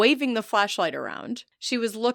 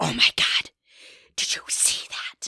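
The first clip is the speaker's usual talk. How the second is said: breathy, urgent whispered shout. Retelling what the speaker said to him after seeing something, retelling a whisper-yell. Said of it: "I whisper yell at him".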